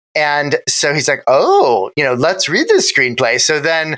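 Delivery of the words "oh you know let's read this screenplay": swooping sing-song character voice, pitch swinging all over. Retelling the character suggesting they read the screenplay: Mad Hatter voice. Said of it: "in his Mad Hatter voice".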